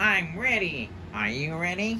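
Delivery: high swooping cartoon voice. Presenting a video's title design, the speaker breaks in: terrible SpongeBob impression. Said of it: "That's my terrible SpongeBob impression".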